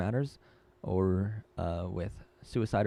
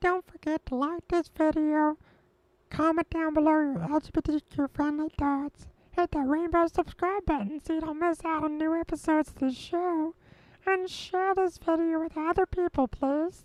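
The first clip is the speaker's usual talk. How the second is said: very high-pitched character voice; 4 dB louder than usual. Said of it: "should I do it in Stitch's voice?".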